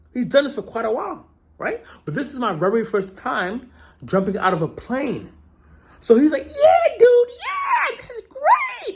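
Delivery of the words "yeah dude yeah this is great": mock stretched-out whooping cheer, shouted, very high, hyped. Retelling an experienced jumper cheering the speaker on before a first jump: imitating hyped-up encouragement. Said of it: "he's like hyping me on".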